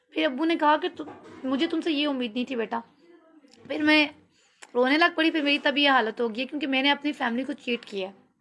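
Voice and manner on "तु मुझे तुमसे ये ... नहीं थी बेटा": normal talking voice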